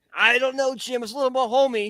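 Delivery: sports commentator voice. Acting out a silly commentators' conversation: Tony Romo voice. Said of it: "Chris Collinsworth and Tony Romo just talking".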